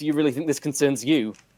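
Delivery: ordinary talk, nothing marked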